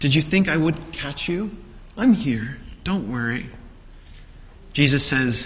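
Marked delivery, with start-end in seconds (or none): 0.0-3.5 put-on gentle, reassuring parent voice. Retelling words spoken to Peter: acting out a parent reassuring a child. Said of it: "the voice of a parent reassuring a child".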